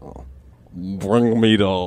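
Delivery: very deep voice with Russian accent. Asked for something in russian, the speaker tries a very deep russian voice. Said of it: "I just go so deep that you can't hear what I'm saying".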